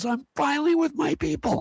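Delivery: mock very high, room-filling, top-of-lungs yell. Retelling a young man's entrance at a conference buffet: imitating a loud yell. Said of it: "he yelled the top of his lungs".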